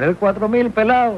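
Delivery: high, wide-ranging, shouted barber's call.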